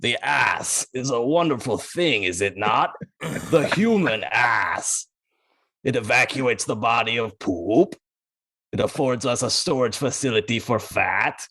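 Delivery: deep, slow, rumbling, gurgling monster growl. Retelling a film scene where the mummy speaks, in a deep, rumbling, gurgling growl. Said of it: "it's a deep, rumbling, gurgling tone. He growls".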